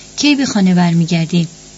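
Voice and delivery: plain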